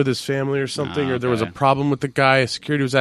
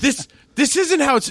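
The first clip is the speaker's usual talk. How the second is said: put-on livid woman voice, much higher; 14 semitones higher than usual. Retelling a woman's reaction as a movie's end credits rolled, imitating her livid. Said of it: "She was pissed".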